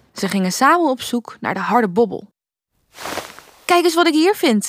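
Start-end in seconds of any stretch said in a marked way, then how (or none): 3.7-4.7 calling out, exclaiming, higher. Reading a story, the narrator voices the little prince searching with the girl, calling out. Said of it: "riep het prinsje".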